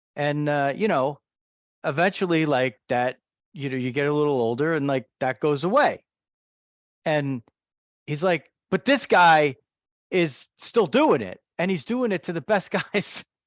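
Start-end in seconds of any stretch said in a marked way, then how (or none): 8.7-13.2 put-on New Jersey accent, higher and louder. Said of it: "he has a great Jersey accent".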